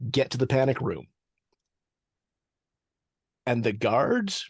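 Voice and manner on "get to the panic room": ordinary talk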